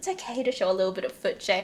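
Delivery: put-on seductive, sultry, coaxing delivery. Retelling a friend peeling off a sock, imitating a seductive voice. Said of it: "she's trying to be seductive".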